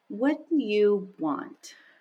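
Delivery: very slow, deliberate, each word dragged out. The speaker quotes a woman who looked at her and asked this, imitating very slow speech. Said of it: "and she spoke so slowly".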